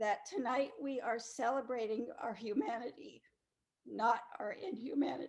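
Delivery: tearful, on the verge of crying. Opening an evening celebration, starting to cry. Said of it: "I'm going to start to cry".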